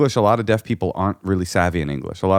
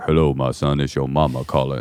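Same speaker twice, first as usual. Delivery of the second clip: deep dude voice, pitched way down; 6 semitones lower than usual. Recalling how the speaker's mom sounded on the phone, deep booming voice. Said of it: "it'd be like a deep booming voice".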